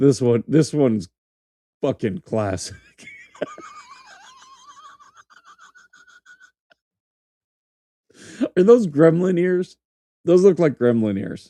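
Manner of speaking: talking through laughter. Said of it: "the laughter is gonna piss them off".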